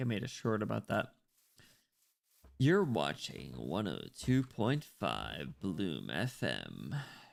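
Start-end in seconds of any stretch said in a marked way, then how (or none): 2.6-6.9 slow, silky-smooth FM radio host voice. Imagining having a radio voice, doing a station intro: silky smooth radio voice. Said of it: "a nice silky smooth voice, like a radio voice".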